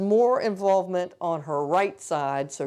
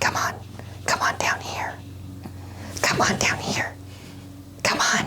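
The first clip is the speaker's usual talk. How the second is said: put-on hushed, breathy, whispery baby doll voice. Voicing a baby doll calling a child to come down: voicing a baby doll. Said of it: "She's saying".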